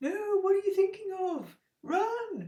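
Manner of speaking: very high little angel voice. Acting out the angel on your shoulder answering the devil; angel-on-your-shoulder voice. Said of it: "devil and angel impression".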